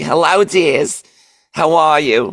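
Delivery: very high-pitched grandmother voice. Showing the popsicle-stick characters he voices, Grandma Ruffman voice. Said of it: "if I had Grandma Ruffman".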